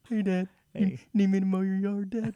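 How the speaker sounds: put-on slow voice. Imitating the other speaker talking to his dad: imitating the other speaker sounding slow. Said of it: "You sound a little slow".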